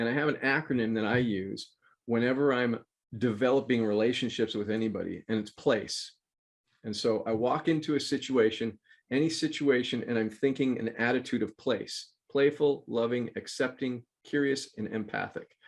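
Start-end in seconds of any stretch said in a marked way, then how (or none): none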